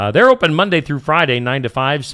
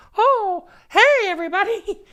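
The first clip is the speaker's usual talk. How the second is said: very high-pitched put-on voice. Doing a best attempt at imitating Toothy for a sponsor read: Toothy impersonation. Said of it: "my best Toothy impersonation".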